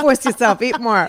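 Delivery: put-on speaking with a New York accent.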